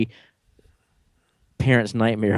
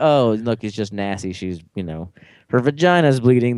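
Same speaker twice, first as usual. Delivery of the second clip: normal talking voice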